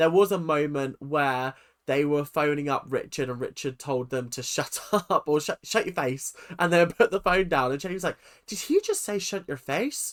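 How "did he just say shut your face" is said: bad put-on Derry accent, high and swooping. Retelling a woman's reaction to a rude phone call, in a bad attempt at a Derry accent. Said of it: "I'm trying to get the Derry accent".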